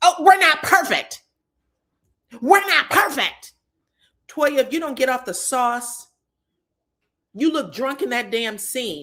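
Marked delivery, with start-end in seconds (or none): 0.0-3.5 shrill, high, loud screaming. Retelling what a reality show cast member said: imitating Toya screaming. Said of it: "Toya basically screams".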